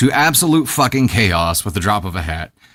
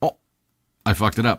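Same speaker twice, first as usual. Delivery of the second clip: ordinary delivery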